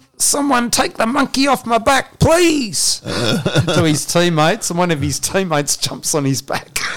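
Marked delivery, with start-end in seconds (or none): 0.2-3.0 very high, acted-out, pleading yell. Retelling what a player shouted from the sideline to his teammates, retelling a yell. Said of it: "he's yelling out".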